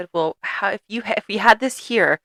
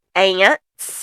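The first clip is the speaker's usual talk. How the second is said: put-on little boy's Southern Alabama accent. Retelling a video where a dad asks his little boy questions, little boy's southern alabama accent. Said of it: "the most adorable little Southern Alabama accent".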